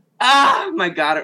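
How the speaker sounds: really loud, high-pitched outburst. Answering the podcast host's welcome: loud exclamation. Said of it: "Sorry if that was really loud".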